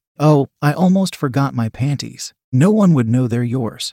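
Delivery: plain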